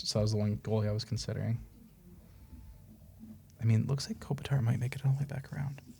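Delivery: soft, secretive whisper. Naming a player still left in a draft so the others won't take him: whispering. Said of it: "You're whispering 'cause you don't want the boys to take it".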